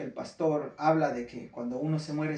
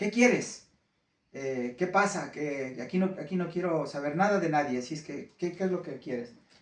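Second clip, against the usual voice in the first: ordinary talk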